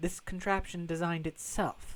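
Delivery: ordinary delivery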